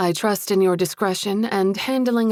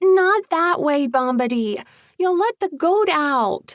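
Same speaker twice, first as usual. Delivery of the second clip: tiny, high pixie voice, called out; 8 semitones higher, 3 dB louder than usual. Narrator reads a pixie calling to Bombadil as the goat breaks loose, tiny pixie voice. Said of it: "a tiny pixie voice called".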